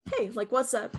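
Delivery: plain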